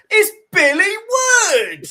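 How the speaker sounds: shrill, very high, full-voice shout. Retelling a reunion moment: imitating Mike shouting at top of voice. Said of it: "you went top of your voice".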